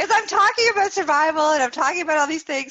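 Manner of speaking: very high, loud speech through laughter. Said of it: "I'm sorry I'm laughing".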